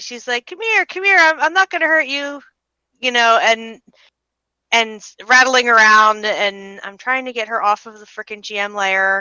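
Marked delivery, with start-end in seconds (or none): 0.5-2.4 calling out, higher pitch. Voicing a figure outside at early morning, calling out to something. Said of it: "sounds like she's calling to something".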